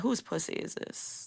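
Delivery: breathy, sultry bedroom whisper. Retelling own words during sex: imitating own sex talk. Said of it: "when I'm having sex and I'm like".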